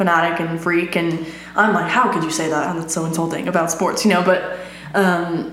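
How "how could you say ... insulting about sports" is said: plain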